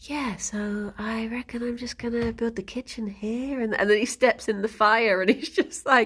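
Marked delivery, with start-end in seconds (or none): 0.0-3.6 mock-calm, quieter, slower put-on delivery. Describing a guy walking around talking, the speaker is imitating a calm guy. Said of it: "he's just saying things really calmly".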